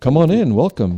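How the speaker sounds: clumsy put-on British accent. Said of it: "I can't do a British accent".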